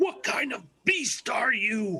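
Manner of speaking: put-on high, shouted call in character. Calling out to a monster in a fight: calling out loudly in character. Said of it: "I'm gonna call out".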